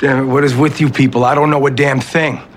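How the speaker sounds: furious outburst. A husband, told his wife's baby is breech, snaps at those updating him, raised voice. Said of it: "Please don't raise your voice".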